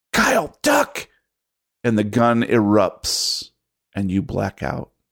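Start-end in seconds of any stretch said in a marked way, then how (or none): 0.1-1.0 shrill, very high-pitched shouted yell. A narrator voices the aunt bursting in with a gun, yelling a warning. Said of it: "and she yells".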